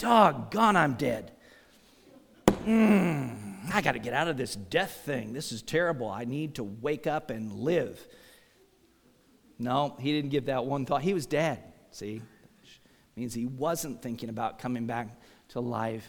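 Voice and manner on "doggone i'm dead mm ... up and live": musing aloud with a drawn-out "mm". Imagining what Lazarus might say in the grave: imitating Lazarus in the grave. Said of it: "Lazarus was not sitting in the grave going".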